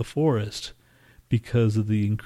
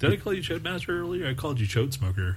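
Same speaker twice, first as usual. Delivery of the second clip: curious, probing, inquisitive tone with pitched-up rise; 6 semitones higher, 4 dB quieter than usual. Asking another speaker about an earlier nickname: inquisitive. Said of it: "You sound so inquisitive there".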